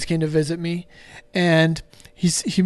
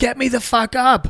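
high-pitched, screamed, demanding voice; 6 semitones higher than usual. Retelling yelling at a nurse while stuck unable to sit up: retelling a scream. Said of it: "I screamed at him".

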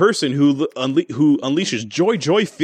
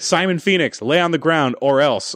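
ordinary talk

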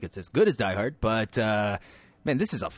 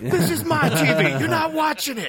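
put-on yelling movie voice, higher and louder; 5 dB louder than usual. Recalling the Al Pacino scenes people remember from Heat: Al Pacino yelling impression. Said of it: "yells in all the memorable scenes".

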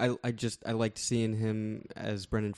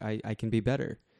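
ordinary delivery

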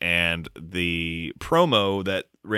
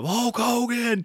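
acted, shrill, very high wrestling promo style scream. Retelling a wrestling promo, imitating someone screaming. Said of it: "he's just screaming at the camera".

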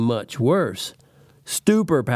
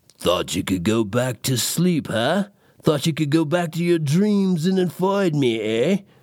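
silent-seeming, hissed character voice; 3 semitones higher than usual. Reading a story aloud, Sleepy Man speaks to the narrator in a hissing whisper. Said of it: "He hissed it with his silent voice".

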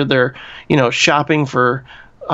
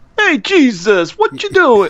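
put-on very high, swooping New York accent; 9 semitones higher than usual. Joking about the way he talks to Jesus, play Judas with a New York accent. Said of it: "with his New York accent".

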